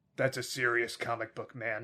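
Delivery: deep, low, deeply serious voice. Retelling a movie scene's line by Corey Feldman: deeply serious voice imitating Corey Feldman. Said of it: "this deeply serious voice".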